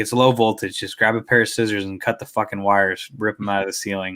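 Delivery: normal talking voice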